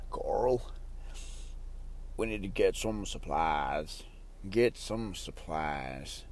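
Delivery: whispered, slow, really bad character voice. Trying out how he talks, admitting it sounds bad, bad impression of him. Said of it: "that sounds really bad".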